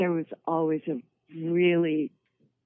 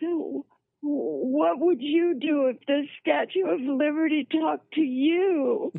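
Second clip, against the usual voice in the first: very high, whimpering, whiny crying voice; 11 semitones higher than usual. Recounting what he said while the others grinned, laughed and stared, whiny crying voice. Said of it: "In my whiny little crying voice".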